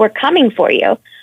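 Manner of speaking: usual speaking voice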